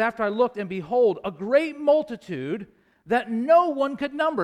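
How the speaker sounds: high, loud voice full of great enthusiasm. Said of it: "really saying it with some, some, some great enthusiasm".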